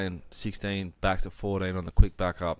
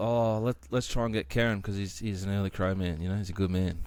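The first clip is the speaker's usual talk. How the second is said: plain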